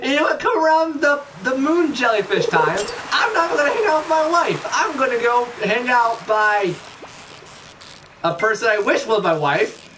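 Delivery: high, pissed-off crazy ranting voice. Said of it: "my pissed off, crazy voice".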